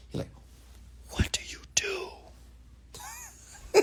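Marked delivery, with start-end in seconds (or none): 1.1-3.8 very quiet, hushed whisper. Retelling how another person asked what he does: imitating a whisper. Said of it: "like, a whisper".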